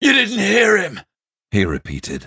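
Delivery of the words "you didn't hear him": voice climbing into a very high, loud shriek. As a guard steps forward, the captive man insists, voice rising to a shriek. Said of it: "The man's voice rose to a shriek".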